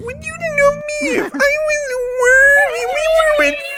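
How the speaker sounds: very high, squeaky put-on voice. Retelling what a woman said by the lake before the ritual, in her highest-pitched voice. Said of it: "put on like her highest pitch voice".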